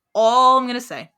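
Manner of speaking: ordinary delivery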